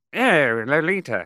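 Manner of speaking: high-pitched British film-star accent. Asked for a taste, doing a James Mason impression. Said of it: "Can we hear a little?".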